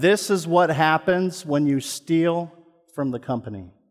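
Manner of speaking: loud, public announcing voice. Retelling what the security officer said: imitating a loud voice. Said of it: "in a loud voice".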